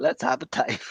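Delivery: put-on Australian accent with a breathy lisp. Repeating a cooking host's catchphrase: imitating an Australian accent with a lisp.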